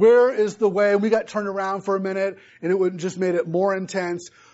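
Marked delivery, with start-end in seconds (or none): 0.0-0.9 re-enacted scream, higher, louder. Retelling being stuck in a dark cave for an hour, retelling a scream. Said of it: "I was just screaming like".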